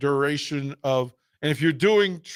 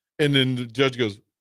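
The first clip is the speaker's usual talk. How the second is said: ordinary talk, nothing marked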